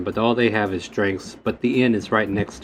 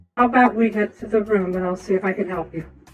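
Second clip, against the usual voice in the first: put-on woman's voice, pitched higher; 11 semitones higher than usual. Voicing an innkeeper character who offers to help: put-on woman's voice. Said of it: "That was me trying a woman's voice".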